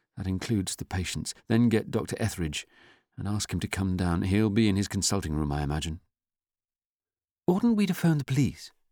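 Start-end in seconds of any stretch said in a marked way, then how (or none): 7.5-8.7 nervous, jittery, very high-pitched voice. A doctor responds to orders that no one leave the building, speaking nervously. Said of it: "Ingram spoke nervously".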